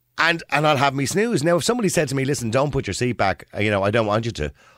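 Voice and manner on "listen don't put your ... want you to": plain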